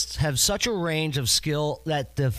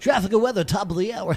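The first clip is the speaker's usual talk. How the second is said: fake radio announcer voice, pitched up; 5 semitones higher, 3 dB louder than usual. A show host demonstrates the style they refuse to use: fake radio voice. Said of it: "I don't do the fake radio voice".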